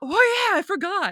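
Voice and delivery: short shocked blurt, high-pitched and loud.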